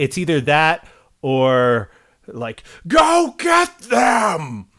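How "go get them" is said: very high, swooping, unhinged lunatic-like screaming. Imitating the villain's second vocal register: Eddie Redmayne screaming lunatic voice. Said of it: "the other being screaming lunatic".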